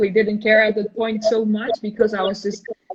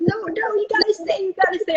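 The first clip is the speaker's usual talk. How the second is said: shrill, very high, insistent screaming; 11 semitones higher than usual. Retelling how a teammate on the pitch kept yelling orders: imitating a teammate screaming. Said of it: "she kept screaming at me".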